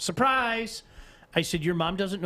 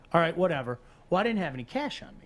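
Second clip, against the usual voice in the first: usual speaking voice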